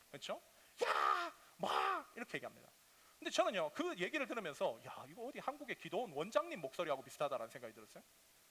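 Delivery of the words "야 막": raspy, worn-out, hoarse, high-pitched call. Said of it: "목이 쉬어 계세요".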